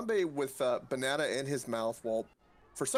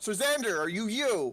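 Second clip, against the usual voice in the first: put-on yelling, higher pitch; 8 semitones higher, 4 dB louder than usual. Playing a character screaming at a captive with a sack over his head: screaming in character. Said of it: "Harambe begins screaming at him".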